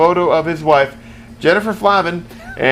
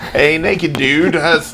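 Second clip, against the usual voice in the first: put-on British accent. Reading a line aloud after being asked for a British voice, put-on British accent. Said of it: "British voice, please".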